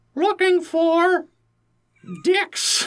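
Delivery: very high, squeaky cartoon mouse character voice. Podcaster voices a forward hermit crab heard in a shell, in a Mickey voice. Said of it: "why i kind of made him sound like mickey".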